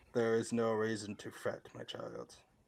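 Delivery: very hushed, soft, deep, rumbling ancient voice. Holding someone up off the ground by the head, speaking in a deep, rumbly, ancient voice. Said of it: "In a very deep, rumbly, like ancient sounding voice".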